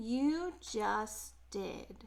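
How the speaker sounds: low, slow, unhurried donkey voice. A donkey answers two mice who couldn't find the king, in a low, slow voice. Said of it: "said the donkey in his low, slow voice".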